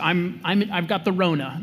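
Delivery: ordinary delivery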